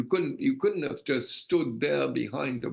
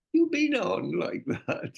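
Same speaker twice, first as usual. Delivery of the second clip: tart sing-song, pitched up, swooping upward; 5 semitones higher than usual. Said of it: "Mick sort of tartly says to him".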